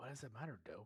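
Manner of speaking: theatrical whisper. Asking another speaker a question, in a hushed voice. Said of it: "And I said that like with a hushed voice".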